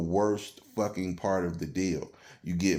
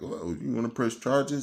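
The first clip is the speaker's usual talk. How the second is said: acted mocking tone, higher; 5 semitones higher than usual. Retelling the cop's question about pressing charges: imitating a mocking cop. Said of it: "might as well just laughed at me".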